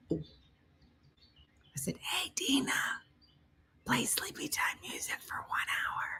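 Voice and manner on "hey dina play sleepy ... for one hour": whispered, hushed, soft, under the breath. Retelling asking the voice assistant quietly so Brooke stays asleep: retelling own whisper. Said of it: "I didn't wanna wake her up".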